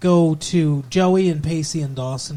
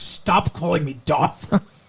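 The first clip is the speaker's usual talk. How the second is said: really annoyed, super pissed, angry snapping tone. Retelling a character's reply when called a name the third time, mock-pissed off. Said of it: "He does get super pissed".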